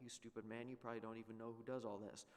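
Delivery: ordinary talk, nothing marked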